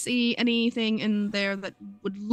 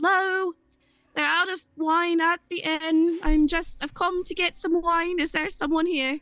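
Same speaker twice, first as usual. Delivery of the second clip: raised, pitched-up, yelled call; 8 semitones higher than usual. Playing a character calling through an open door: yelling into a house. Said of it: "I am going to yell in".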